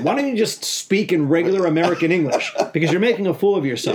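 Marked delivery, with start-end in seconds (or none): none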